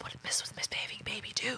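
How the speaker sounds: very hushed, secretive, conspiratorial whisper. Showing a helpful whisper technique, in a conspiratorial whisper. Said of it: "that would be a really helpful whisper technique".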